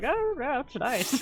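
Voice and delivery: mumbled under the breath, soft and high. Voicing a character who sits down to rest: muttering under his breath. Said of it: "mutters something under his breath".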